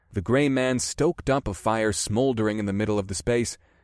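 plain reading voice

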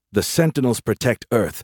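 plain reading voice

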